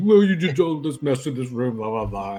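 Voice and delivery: put-on baby-talk voice. Playing a character cuddling a small creature, baby talk. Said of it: "just kind of baby talking him".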